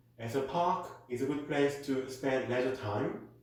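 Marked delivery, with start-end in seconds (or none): none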